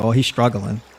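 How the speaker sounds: normal talking voice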